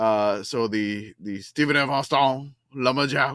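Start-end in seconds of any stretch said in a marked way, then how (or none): 1.2-3.3 put-on comic Cajun accent. Reading a team name aloud in the Cajun Man voice. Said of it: "I gotta read it in the Cajun Man voice".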